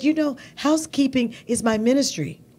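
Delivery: acted Spanish-accented speech. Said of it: "I'm trying to do her accent".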